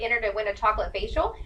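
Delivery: ordinary delivery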